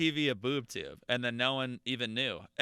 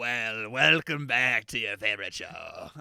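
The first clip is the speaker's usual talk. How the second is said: evil, half-pirate villain host voice; 3 semitones lower than usual. Co-host repeats the show's welcome like an evil villain, half pirate voice. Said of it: "that's like a half pirate kind of guy".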